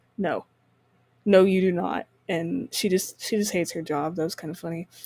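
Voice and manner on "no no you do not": put-on slow, utterly flat, bored teacher deadpan. Retelling a movie scene where the teacher answers an excited kid, imitating extremely deadpan teacher. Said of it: "in like an extremely deadpan voice".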